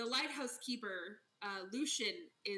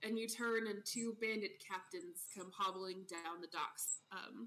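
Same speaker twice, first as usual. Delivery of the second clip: usual speaking voice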